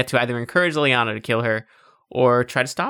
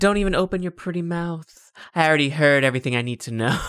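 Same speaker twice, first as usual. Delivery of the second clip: put-on hammy evil villain voice; 4 semitones higher than usual. Retelling a villain line from the game: imitating Leliana's evil villain voice. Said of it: "she's like".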